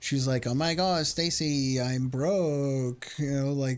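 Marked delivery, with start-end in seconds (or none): 0.5-3.1 put-on very slow, stretched, broken, drawn-out valley girl talk. Imitating how a woman talks to another speaker: imitating a valley girl. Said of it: "she's very valley girl".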